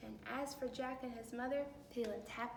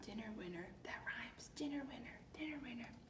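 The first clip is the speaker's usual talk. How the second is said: plain reading voice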